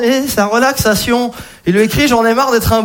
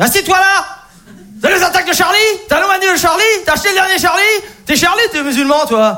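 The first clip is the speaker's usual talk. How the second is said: acted, worked-up, agitated, angry, pitched up; 7 semitones higher than usual. Retelling his barber's rant after the Charlie attacks, imitating an angry barber. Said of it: "le mec était énervé".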